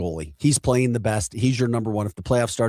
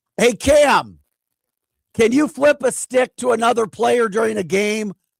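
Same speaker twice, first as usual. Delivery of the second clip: very high, loud yell projected far; 12 semitones higher, 5 dB louder than usual. Calling a question to Cam while recording: yelling to another room. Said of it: "I'm gonna yell to him".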